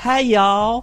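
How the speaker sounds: put-on Southern accent. Ranking untrustworthy accents, demonstrate the southern accent. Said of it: "The Southern accent".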